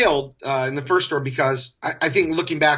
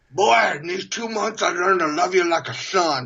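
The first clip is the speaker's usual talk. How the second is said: thick-mouthed, muffled mumbling voice; 4 semitones higher than usual. Retelling the general manager's words to the speaker, Sam's cotton-balls-in-cheeks voice. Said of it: "he spoke like he had cotton balls in his cheeks".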